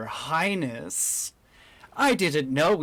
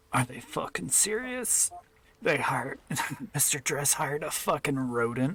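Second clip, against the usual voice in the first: quiet, grumbling mutter under the breath; 6 dB quieter than usual. A guard rubbing his eyes speaks to himself, muttering under his breath. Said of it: "you can hear him speak under his breath".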